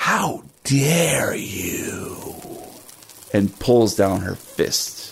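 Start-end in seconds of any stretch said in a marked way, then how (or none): 0.0-2.8 soft, hushed whisper under the breath. Voicing a character who turns toward Rocky and whispers: whispering. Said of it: "and whispers".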